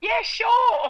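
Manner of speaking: high shouted voice. Retelling a yelled answer to mum across the house: imitating own past yell. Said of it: "And I yelled back".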